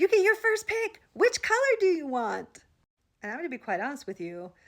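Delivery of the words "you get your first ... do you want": mock very high, giddy excitement. Retelling what a coworker said about new box openers: imitating someone saying excitedly. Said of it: "she very excitedly said to me".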